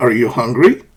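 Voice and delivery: upward rising pitch on hungry. Teaching yes-no question intonation with an example: rising pitch on hungry. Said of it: "The intonation rises".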